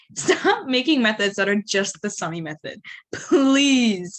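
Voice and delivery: fed-up, emphatic, stressing please.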